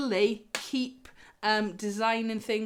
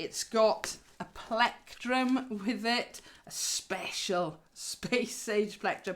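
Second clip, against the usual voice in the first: slow drawl, dripping with sarcasm. Listing what comes in the box for listeners, sarcastic. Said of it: "You can hear the sarcasm starting to come through".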